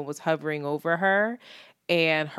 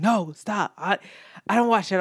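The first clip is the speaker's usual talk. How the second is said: put-on nervous delivery, pitched higher; 3 semitones higher, 4 dB louder than usual. Retelling a man's reply when porn showed on his iPad, imitating his nervousness. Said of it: "he got all nervous".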